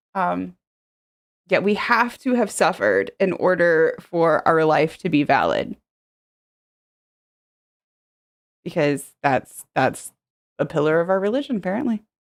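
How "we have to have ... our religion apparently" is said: heavy sarcastic delivery, swooping sing-song. Reacting to a viewer's comment about a martyr complex: sarcastic. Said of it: "that was me being sarcastic".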